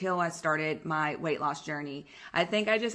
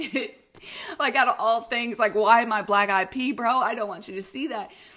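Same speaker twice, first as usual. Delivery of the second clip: put-on panicky, high, worked-up rambling; 5 semitones higher, 5 dB louder than usual. Recounting lying on a table before the doctor walked in, retelling own panic. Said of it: "And I'm like panicking".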